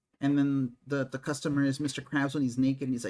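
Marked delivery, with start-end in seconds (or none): none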